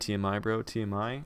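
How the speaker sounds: plain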